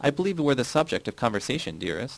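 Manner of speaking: ordinary talk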